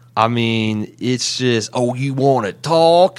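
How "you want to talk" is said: put-on, poorly done superhero voice with Southern accent. Discussing Rick's bad accent in an episode, Rick's Southern Fried Batman voice. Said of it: "Southern Fried Batman voice".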